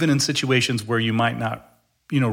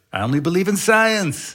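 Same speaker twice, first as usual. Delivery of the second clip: high-pitched put-on Mexican-American accent; 8 semitones higher than usual. Quoting what the Nacho Libre guy says during a discussion, in a Nacho Libre accent. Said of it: "That's my Mexican-American accent there".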